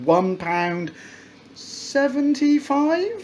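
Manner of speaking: rising tune, pitch climbing at the end on seventy-five. Speaker reviewing a sauce purchase, unsure of its price, with rising question intonation. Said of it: "I raise my voice because it's a question".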